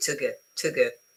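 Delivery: unstressed weak-form to, vowel reduced to schwa. Teaching English pronunciation, demonstrating an unstressed to. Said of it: "I'm not putting any stress".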